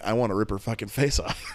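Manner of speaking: ordinary delivery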